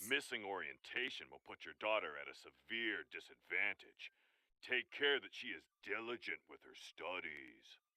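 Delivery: very low, deep, overly serious put-on solemn gravity. In the story, Dad repeats a teacher's words: mock-serious voice. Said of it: "Dad affects a mock serious voice".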